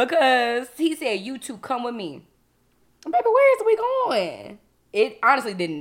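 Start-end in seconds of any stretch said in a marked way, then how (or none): 1.2-2.2 mock stern authoritative commanding voice, much quieter. Retelling what a man told the speaker and a companion: imitating a stern, authoritative order. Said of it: "in the sternest voice that he could muster, very authoritative".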